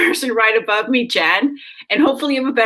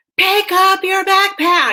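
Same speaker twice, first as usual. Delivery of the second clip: play-acted, shrill, last-straw exasperated yell; 8 semitones higher than usual. A mother retells what she said to her kids, retelling a yell. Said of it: "the eleventh time I yelled".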